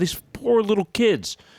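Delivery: tearful, choked-up, heartbroken, lamenting voice. Retelling own reaction to a news story: retelling own tearful words. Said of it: "I'm tearing up".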